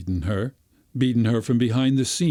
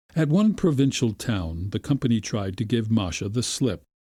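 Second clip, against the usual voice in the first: ordinary delivery, nothing marked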